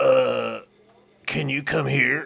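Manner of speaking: very slow, rough, creaky voice. Reading out a text message he sent, imitating his voice. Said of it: "I'm just going to read it in his voice".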